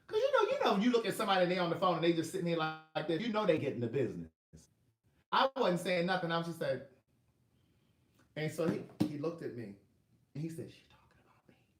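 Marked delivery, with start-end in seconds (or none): 10.7-11.5 put-on whisper, quieter than normal. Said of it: "whispered it".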